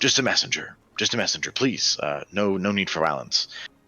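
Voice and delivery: lofty, gracious, dignified noble voice. Narrating a scene, voicing a messenger who raises a hand against an axe; noble tone. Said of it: "in a very kind of like noble tone and voice".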